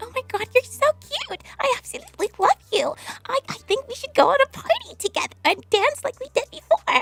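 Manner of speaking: put-on very high-pitched, childlike little girl voice. Trying out character voices, the speaker does a little girl voice. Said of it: "I could do like a little girl".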